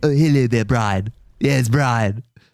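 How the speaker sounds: put-on cartoon baby voice. Doing the same line again, now addressing Brian: Stewie voice. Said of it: "That's just Stewie".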